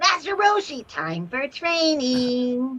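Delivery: put-on high, swooping kid hero voice. Answering a request to do a Goku voice line: Kid Goku voice. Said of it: "Can you just do a Goku voice line?".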